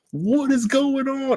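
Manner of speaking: acted frantic outburst. Recounting watching a game shrunk into a tiny window, retelling own frantic outburst. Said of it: "and I am losing it".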